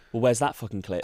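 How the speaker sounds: ordinary talk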